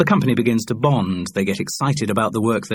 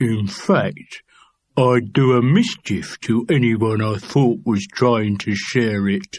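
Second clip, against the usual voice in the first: put-on punch-drunk prizefighter manner. Narrator reads a man's line to Bernard Walton in a punch-drunk boxer's voice. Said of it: "He dropped into a punch-drunk boxer's voice".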